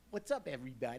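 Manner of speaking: put-on strong, heavy Chicago accent. Retelling an audition retry with a strong Chicago accent. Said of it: "That sounded more Chicago".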